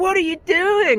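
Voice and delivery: put-on very high, furious childish outburst. Retelling how the bank manager confronted him: imitating a furious bank manager. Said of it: "he was furious".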